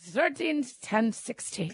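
slow mock Dutch accent slipping into Scottish.

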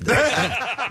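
high-pitched, laughing, self-mocking voice.

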